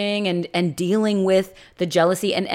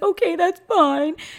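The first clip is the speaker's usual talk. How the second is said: very high, crying, tearful and upset voice; 10 semitones higher than usual. Speaker retells what a character said after being told about it, imitating Zoe crying, upset. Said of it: "She cries and she gets all upset and she's like".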